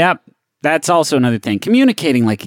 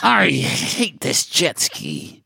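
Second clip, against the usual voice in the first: growling angry voice, quieter and slower; 5 dB quieter than usual. Trying out a voice tip for the first time, growling angry voice. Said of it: "incorporate a growl into your voice when you're mad".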